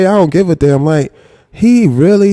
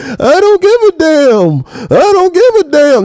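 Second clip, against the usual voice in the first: acted, very high-pitched, drawn-out whine; 9 semitones higher than usual. Mocking a man's words from a replayed clip: imitating someone whining. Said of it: "why you whining for?".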